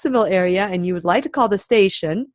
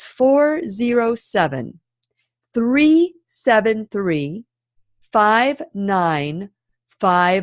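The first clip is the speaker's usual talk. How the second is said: slow, deliberate, each unit carefully spaced out. Repeating the show's phone number for listeners, a little slower this time. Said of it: "So I'm going to say a little slower this time".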